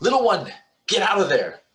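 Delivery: very high, shrill, swooping scream. Voicing a character who warns Finley to flee: screaming a warning. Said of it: "she's gonna scream back to Finley and say".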